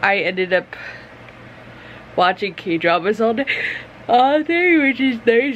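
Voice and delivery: yawning while speaking. Speaker chatting to viewers after watching k-dramas all day, yawning. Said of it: "which is why I'm yawning".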